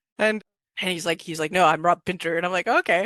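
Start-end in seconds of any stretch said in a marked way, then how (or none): 1.5-2.4 exaggerated fake Russian accent. Recounting what a man with a heavy accent told him: imitating Rob Pinter's heavy Russian accent. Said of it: "he's got this this heavy uh kind of Russian border accent".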